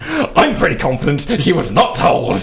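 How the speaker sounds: riled-up, worked-up, heated delivery. Asked to do it again, the speaker repeats their earlier tone: re-enacting being worked up. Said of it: "Ooh! Do it again".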